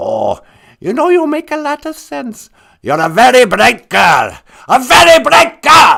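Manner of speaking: loud character voice with widely swooping pitch. Playing a caller on a radio phone-in skit: Hitler voice. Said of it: "Hitler, you're on the air".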